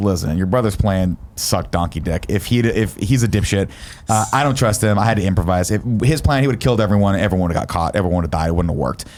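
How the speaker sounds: ordinary talk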